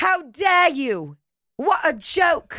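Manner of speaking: put-on slipping into an Australian accent. Performing a mock speech line, slipping into an Australian accent. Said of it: "I slipped into a Australian accent".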